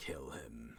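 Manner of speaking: deep, faint, hushed, dissociated ethereal voice. In a tabletop game, a ghostly character speaks as Jocelyn hears: dissociated ethereal voice. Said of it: "in that like disassociated ethereal voice".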